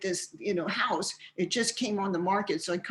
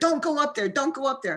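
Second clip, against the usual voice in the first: put-on high, urgent yelling; 6 semitones higher, 4 dB louder than usual. Retelling yelling at a friend who ran upstairs, retelling a yell. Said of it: "I'm yelling at her".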